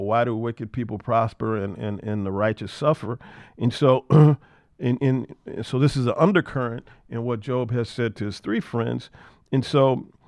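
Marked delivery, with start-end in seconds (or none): none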